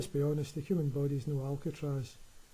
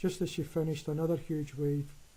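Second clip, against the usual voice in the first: plain reading voice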